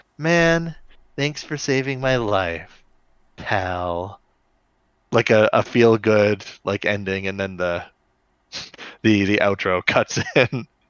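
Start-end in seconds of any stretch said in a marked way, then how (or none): 0.2-4.2 quieter and slower, softly to himself. Retelling a character's closing line before a show's outro, quietly to himself. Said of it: "quietly says to himself".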